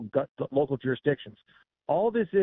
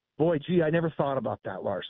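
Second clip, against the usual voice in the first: extreme, heavy sarcasm laid on thick. Speaker answers an objection often thrown at him, extremely sarcastic. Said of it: "I'm being extremely sarcastic when I say that".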